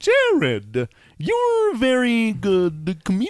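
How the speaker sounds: very slow, high, swooping, drawn-out sing-song lilt. Trying out an Emo Phillips impression for the others: Emo Phillips impression. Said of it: "I'm gonna try to do an Emo Phillips impression".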